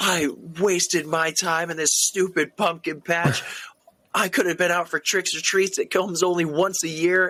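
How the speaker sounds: high, livid, exploding yelling. Retelling a cartoon scene where Sally explodes at him: retelling Sally's livid yelling. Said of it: "explodes and just starts yelling at him like".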